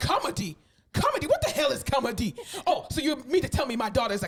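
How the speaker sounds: put-on Nigerian accent, mock incredulous. Retelling a mother hearing her daughter wants to become a comedian, nigerian mother accent, mock-incredulous. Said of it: "Her Nigerian mother".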